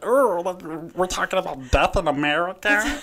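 put-on cutesy, high, slow baby-voice delivery. Imitating podcasters who talk in baby voices about anything: imitating podcasters' baby voice. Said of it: "talking in baby voices".

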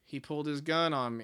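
put-on idiotic, murderous deadpan. Retelling a movie scene where someone asks why he shot him, deadpan Jack Nicholson impression. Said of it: "like idiotic, murderous deadpan goes".

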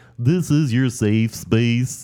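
put-on stuffy nasal voice. Imitating lines Barney had in his songs: Barney voice. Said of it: "try to sound like we have a cold".

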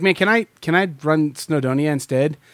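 normal talking voice

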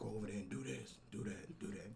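put-on rasping voice. Imitating the captain from Chicago PD in a raspy Chicago PD captain voice. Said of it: "He talk like this. ... Just got real nice, raspy voice".

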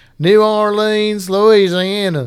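strong put-on country accent. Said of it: "But I went totally, like, country".

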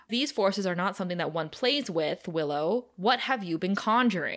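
ordinary talk

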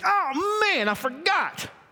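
high, squeaky, caught-off-guard surprised mock voice. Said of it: "God was like".

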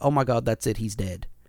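calm, low, deadpan, matter-of-fact delivery. Retelling a commentator's reaction to a wrestler being knocked out: mock matter-of-fact, as Jerry Lawler. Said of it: "matter-of-factly goes".

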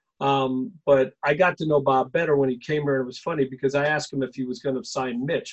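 ordinary talk, nothing marked

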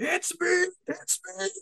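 put-on shriek, very high and slowly drawn out. Retelling a movie scene where a fisherman starts screaming: imitating someone screaming. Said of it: "he starts screaming".

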